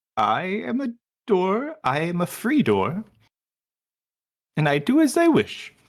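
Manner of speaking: high, swooping talking-doorknob character voice. Voicing a talking door answering a player: talking doorknob voice. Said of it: "if you sound like that".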